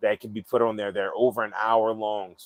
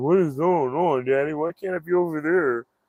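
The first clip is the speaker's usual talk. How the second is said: pitched-up dog voice; 6 semitones higher than usual. Voicing what the dog on the chair seems to ask: voicing the dog. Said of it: "looking at me like".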